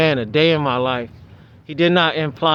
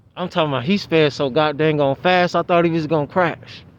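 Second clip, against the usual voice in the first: plain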